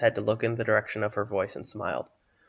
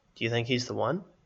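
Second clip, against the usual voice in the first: ordinary delivery, nothing marked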